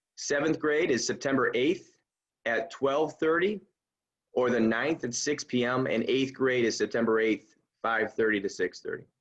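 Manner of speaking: deliberately slowed speech. Announcing grade meeting dates, the speaker slows down for the translation: talking a little slower. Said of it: "I'm going to talk a little slower".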